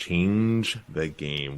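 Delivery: change the game emphasized, drawn out very slow, soft. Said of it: "Lots of emphasis on that".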